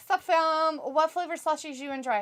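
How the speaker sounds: ordinary delivery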